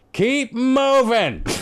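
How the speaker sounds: put-on shouting with a very high voice. Retelling a run-in at a gate, imitating someone yelling. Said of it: "he starts yelling".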